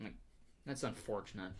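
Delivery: ordinary talk, nothing marked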